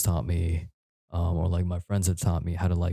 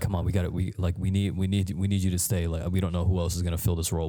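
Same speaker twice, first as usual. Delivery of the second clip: put-on panicked, pleading tone. Retelling how they begged the speaker to stay, imitating panicked pleading. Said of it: "I can hear the panic almost in their voice".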